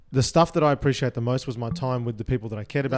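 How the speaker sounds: plain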